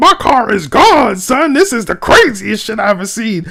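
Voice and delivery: mock thrilled squealing, pitched way up. Imitating a man in a video whose car is gone: imitating an excited man. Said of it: "this dude is excited. He's like".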